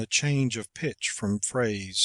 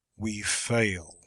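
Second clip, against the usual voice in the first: deep, low, firm, resolute tone. Demonstrating one reading of the line, with the simple period: deep, low, resolute tone. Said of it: "modulating the voice to a deep, low, resolute tone".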